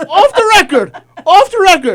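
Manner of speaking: very loud, very high, slow yelling. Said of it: "You know you're yelling".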